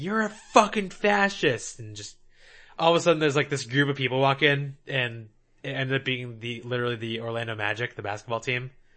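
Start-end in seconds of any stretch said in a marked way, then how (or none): 0.0-1.8 play-acted, high yelling outburst from a woman. Late at night in a hotel after a convention: retelling a woman yelling. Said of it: "she's just yelling like".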